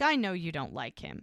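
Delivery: ordinary delivery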